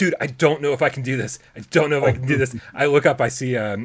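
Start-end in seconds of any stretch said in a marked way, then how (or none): 0.0-2.5 play-acted voice on the verge of crying. Retelling own words to a friend on a roller coaster: retelling own near-crying plea. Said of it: "almost crying".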